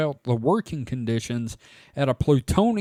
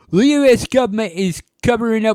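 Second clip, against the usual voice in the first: terrible British accent, high and loud; 8 semitones higher, 8 dB louder than usual. Reading a news headline aloud in a terrible british accent. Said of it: "that's a terrible accent".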